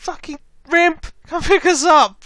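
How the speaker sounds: very high scream, projected far. Voicing a character waving down a flyer from the desert: screaming for pickup. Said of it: "after waving down and screaming".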